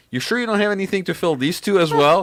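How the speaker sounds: put-on sarcastic voice. Retelling a woman's sarcastic remark to the speaker, mimicking her sarcastic tone. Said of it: "sarcastically was telling me".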